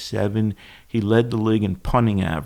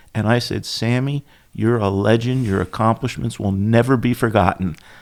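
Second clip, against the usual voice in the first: ordinary talk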